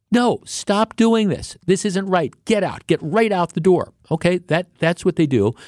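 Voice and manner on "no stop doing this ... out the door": mock, high-pitched yelling. Retelling store employees yelling at teenagers who are stealing, imitating employees yelling. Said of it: "they're yelling at these kids".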